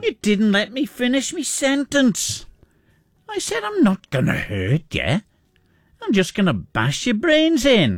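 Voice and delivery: put-on Isle of Man accent. Quoting famous lines from a gruesome film, the speaker delivers them in a Manx accent. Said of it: "So the lines go like this in the Manx accent".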